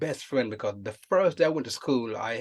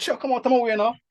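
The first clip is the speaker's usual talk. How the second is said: put-on very high, loud, urging Jamaican accent; 11 semitones higher, 5 dB louder than usual. Retelling what you said to Chuck when you met him, Jamaican accent. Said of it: "with the Jamaican accent".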